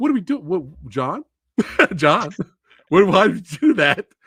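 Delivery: high, baffled outburst in disbelief. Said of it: "I was like".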